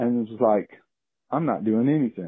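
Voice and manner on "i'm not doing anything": mock casual, couldn't-care-less bear voice. Retelling a bear's reaction while it raided the garbage: voicing a nonchalant bear. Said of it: "very nonchalantly".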